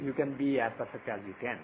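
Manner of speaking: plain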